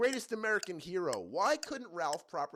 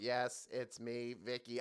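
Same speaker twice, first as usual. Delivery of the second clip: level, slow machine-like voice; 4 semitones lower, 5 dB quieter than usual. Host imitating a robot character's line from a syndicated show: Vicky's robot voice. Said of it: "Vicky had a robot voice".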